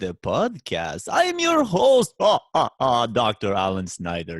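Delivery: theatrical vampire count voice with swooping pitch. Podcast host introducing himself on a Halloween episode: vampire voice. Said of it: "is is that a vampire voice?".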